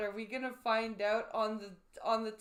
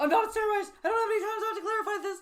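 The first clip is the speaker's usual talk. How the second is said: put-on fast talk, higher and louder; 11 semitones higher, 7 dB louder than usual. Repeating a clip's line after asking why he talks so fast: imitating Logan Paul talking fast. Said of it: "Why is he talking so fast?".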